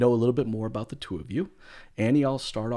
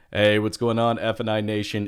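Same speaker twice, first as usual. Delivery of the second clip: loud, put-on, polished on-air radio announcer voice; 6 dB louder than usual. Host opens a podcast episode after its intro, put-on radio announcer voice. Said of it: "That is my best radio announcer voice".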